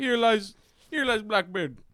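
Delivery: very high-pitched, put-on Caribbean accent. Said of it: "Doesn't sound very Caribbean to me".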